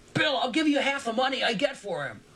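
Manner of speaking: anxious, worried, high-pitched, almost screaming. Calling ahead from twenty feet behind, worried and almost screaming. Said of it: "Circus's worried voice almost screamed".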